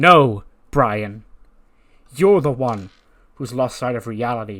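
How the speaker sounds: loud, furious snapping voice. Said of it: "Seth snaps and goes".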